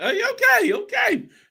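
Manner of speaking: surprised, excited, pitched way up.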